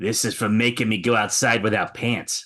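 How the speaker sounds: hushed half-whisper, up close. Stabbing an assassin up close and half-whispering in his ear: half-whispering in character. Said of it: "I'm close enough where I can whisper".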